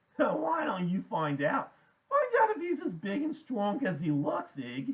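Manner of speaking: giggly teasing voice. Reading a story aloud, voicing a character poking another: strange giggly voice. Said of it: "in this strange giggly voice".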